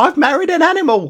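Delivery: shrill, very high-pitched put-on voice. Retelling a man's anecdote about a bride, quoting her at the window in a high-pitched voice. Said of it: "he says that in a kind of high-pitched voice".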